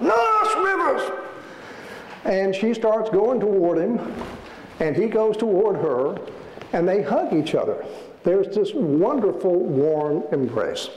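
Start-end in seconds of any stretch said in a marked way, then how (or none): 0.0-1.1 high, slow yell at the top of his lungs. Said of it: "he starts yelling at the top of his lungs".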